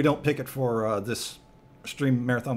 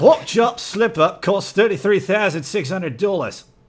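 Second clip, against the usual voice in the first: put-on Australian accent, pitched up; 7 semitones higher, 9 dB louder than usual. Reading a news headline from Sydney, in a put-on Australian accent. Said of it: "See, that's my Australian accent".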